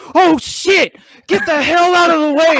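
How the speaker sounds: high, loud, panicked shout. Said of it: "all you hear is Ryan is like".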